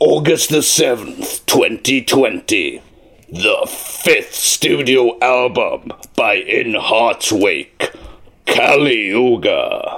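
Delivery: deep, epic, very low trailer announcer voice. Asked to give a kali yuga promo, the speaker performs it: album promo voice. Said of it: "give us a Kali Yuga like promo".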